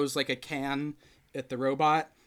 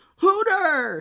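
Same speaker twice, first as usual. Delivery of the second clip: shrill, very high, very loud angry yell; 9 dB louder than usual. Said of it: "[name] yells kind of like angrily".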